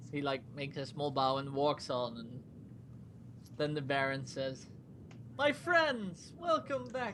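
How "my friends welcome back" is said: high, cheerful voice. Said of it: "He sounds more cheerful than I remember".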